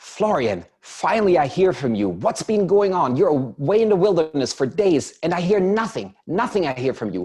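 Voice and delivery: furious scolding.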